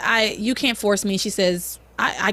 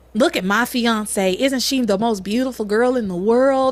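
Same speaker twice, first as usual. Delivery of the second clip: put-on, odd-sounding Southern accent. Retelling a character gushing over his fiancee: imitating a weird Southern accent. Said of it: "this weird Southern accent that comes and goes".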